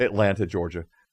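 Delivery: all accent dropped, plain, level American accent. Recalling introducing themselves as a pastor, the speaker names their city with the accent dropped. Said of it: "all accent drops".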